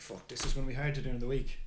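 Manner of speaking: usual speaking voice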